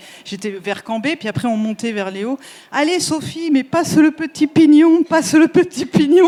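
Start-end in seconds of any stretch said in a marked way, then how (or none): 2.7-6.3 put-on Marseille accent. Retelling how the guy riding in front turned around and spoke to Sophie, slight Marseille accent. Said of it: "il était un peu l'accent marseillais".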